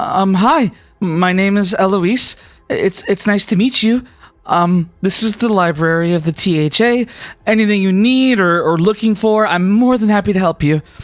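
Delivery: shy, nervous, halting and hesitant delivery. Narrating a scene, the speaker voices Eloise greeting the arriving group, shy and nervous. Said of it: "she's like really shy and nervous".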